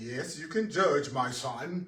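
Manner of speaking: put-on slow, unhurried, measured Caribbean accent. Voicing God answering a question about judging: God speaking with Caribbean accent. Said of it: "God kinda has a Caribbean accent".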